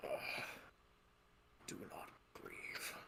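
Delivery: weak, feeble whisper with a groan. Voicing a dying character's final words: weak groaning voice. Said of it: "Alfred weakly gr-, groans and says".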